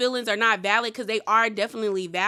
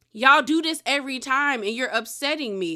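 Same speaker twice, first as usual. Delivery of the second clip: plain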